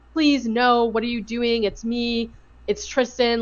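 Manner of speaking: tearful, begging tone through sobs, crying. Describing footage, the speaker acts out a woman pleading, imitating crying and sobbing. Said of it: "she's like crying and sobbing".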